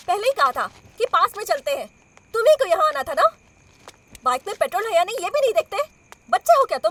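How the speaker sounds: angry scolding yell. Scolding the bike rider after the petrol runs out, angry yelling. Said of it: "चिल्लाओ मत।".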